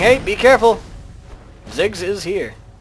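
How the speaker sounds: ordinary talk, nothing marked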